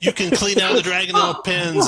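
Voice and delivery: loud, high, sneering, mocking villain voice.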